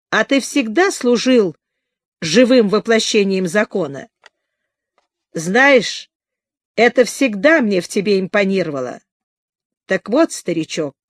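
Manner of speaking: ordinary delivery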